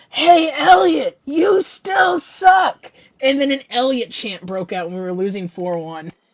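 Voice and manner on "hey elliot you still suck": very high, very loud, shrill, drawn-out scream. Retelling what a fan behind them screamed at the goalie: imitating a fan screaming. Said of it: "he screamed".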